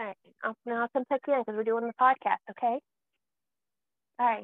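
motherly voice. A mother talks to her child at bedtime, in mom voice. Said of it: "Now I got to get out of mom voice".

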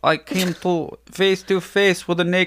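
attempted French accent. Asked how to do French, the speaker tries a news quote in a bad French accent. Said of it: "How do you French?".

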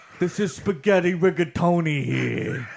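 slow, bad put-on New York accent. Joking about a podcast voice, doing a terrible New York impression. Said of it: "this terrible New York impression".

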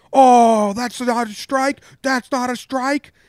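shrill, high yelling. Retelling how the umpire yelled back at the dugout: imitating someone yelling. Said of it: "He starts yelling like".

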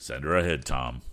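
ordinary delivery

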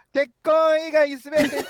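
saying it loudly. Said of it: "これぐらいの声でお願いします。".

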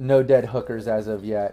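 ordinary talk

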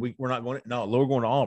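plain

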